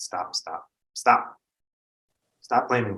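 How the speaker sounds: angry. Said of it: "I'm so angry right now".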